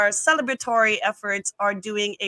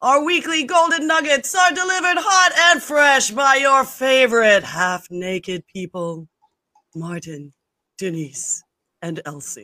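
put-on ominous horror announcer voice, higher and louder; 3 semitones higher, 5 dB louder than usual. Opening the show with an intro in an Orson Welles voice. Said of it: "my best attempt at an Orson, Orson Welles kind of".

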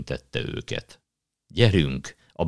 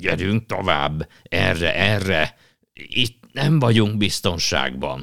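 croaky, guttural beaver voice from the throat; 4 semitones higher, 4 dB louder than usual. A narrator voices a beaver leading the children through the woods, croaky guttural voice. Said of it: "furcsán krákogó torokhangon szólt".

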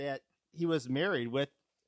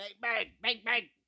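high-pitched mock gunshot sounds, bang bang. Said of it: "driving around going".

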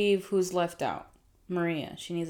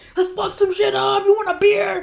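shrill, loud, high, aggressively happy holler; 11 dB louder than usual. Comparing Niners and Raiders fans with another speaker, imitating aggressively happy Raiders fan. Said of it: "aggressively happy".

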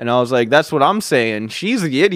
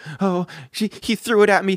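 put-on crying voice, higher pitch; 5 semitones higher than usual. Retelling what a crying girl told the principal, imitating someone crying. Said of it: "of tears".

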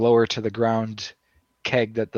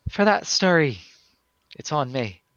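put-on Scottish accent; 4 semitones higher than usual. Voicing a woman in the story who hands over a keg, in a scottish accent. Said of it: "Wait, now she's Scottish?".

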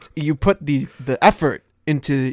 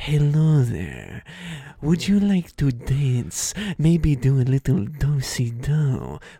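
over-the-top theatrical villain voice, slow with big swoops; 3 dB quieter than usual. Acting out a cowboy asking a woman to dance, in a Riddler accent. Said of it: "The Riddler accent's a little bit".

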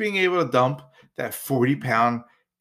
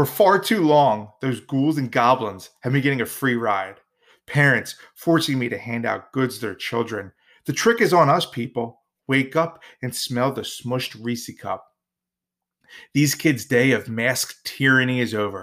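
ordinary talk, nothing marked

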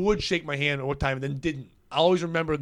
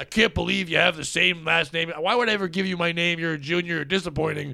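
put-on yelling, higher; 3 semitones higher than usual. Speaker recalls what his dad would say to him, imitating dad yelling. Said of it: "My dad could be yelling at me and saying".

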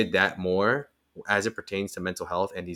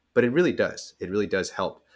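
choked-up voice, words catching with emotion. Speaking about support from athletes, peers and family, choked up. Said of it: "I'm getting a little choked up about it".

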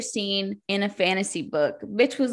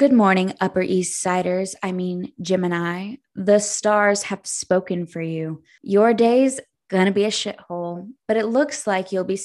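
put-on gossipy teen-drama narrator voice; 4 dB louder than usual. Reading a daily horoscope from a Zodiac book: Gossip Girl voice. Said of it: "it can only be read in the voice of Gossip Girl".

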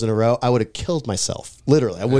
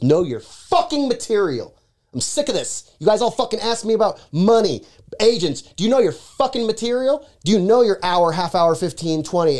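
mock, high-pitched shouted yelling rant; 8 semitones higher than usual. Retelling how Ralphie yelled at the audience: imitating Ralphie yelling. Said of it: "he yells at the audience".

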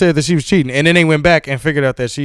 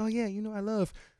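soft, light, high, hushed innocent voice; 8 semitones higher, 17 dB quieter than usual. Joking about Serena Williams acting sweet after a fight: imitating Serena Williams' light innocent voice. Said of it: "use a real light voice and be innocent".

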